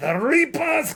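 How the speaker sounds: imitated Scottish accent. Retelling walking around copying an audiobook narrator: imitating a scottish accent. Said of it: "in a Scottish accent".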